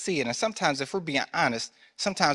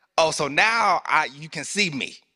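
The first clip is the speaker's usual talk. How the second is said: put-on sarcastic tone, louder; 5 dB louder than usual. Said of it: "you can almost hear the sarcasm".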